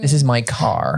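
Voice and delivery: generic standard American accent. Repeating an example sentence in an accent lesson: generic American accent. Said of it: "if you went generic American accent".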